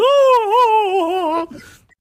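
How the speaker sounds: very high-pitched, crying vocal wail. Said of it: "some high-pitched voice going".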